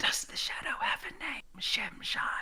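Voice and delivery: put-on tiny, breathy, little-girl whisper. In a role-playing game, a little girl leans in to a player and asks: tiny whisper. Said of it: "she whispers in a tiny voice".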